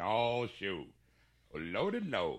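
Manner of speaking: put-on Southern gentleman accent. Feeling hot in the studio, the speaker switches to a southern gentleman accent. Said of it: "now I'm going to be talking like a southern gentleman".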